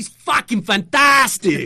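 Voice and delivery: put-on distinct German accent, very loud and very high. Retelling a guest's answer on a live podcast, in his German accent. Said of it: "in his distinctly German accent".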